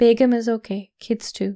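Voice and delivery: ordinary delivery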